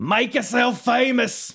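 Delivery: high, loud announcer-style call. Discussing wrestling, a podcaster quotes the line in a Jim Ross voice. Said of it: "my choice for Jim Ross's voice".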